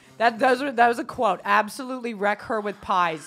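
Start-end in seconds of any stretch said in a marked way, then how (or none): none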